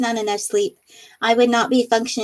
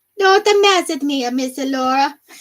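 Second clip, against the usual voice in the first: bad, fake Sicilian accent, much higher pitch; 4 semitones higher, 3 dB louder than usual. Joking with Laura about accents, doing a bad Sicilian accent. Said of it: "That's my bad inner Sicilian coming out".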